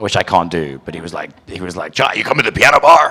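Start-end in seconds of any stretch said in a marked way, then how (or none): 1.9-3.1 loud, high, booming put-on movie-star voice. Retelling someone coming up behind him: Al Pacino voice. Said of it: "in his Al Pacino voice".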